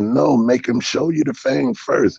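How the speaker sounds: mock urgent, rough, high, gritty scream at full volume. Retelling shouting to a homeboy among two hundred people: retelling a scream at top of lungs. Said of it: "I'm screaming to my homeboy".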